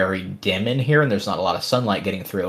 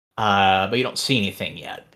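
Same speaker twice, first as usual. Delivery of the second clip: ordinary delivery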